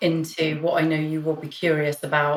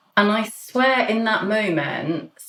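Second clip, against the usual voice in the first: plain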